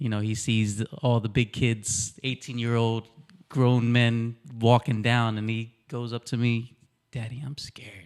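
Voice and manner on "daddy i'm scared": very quiet, barely audible whisper. Father recalls his son at the big Wildwood slide, retelling a child's whisper. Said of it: "He whispers".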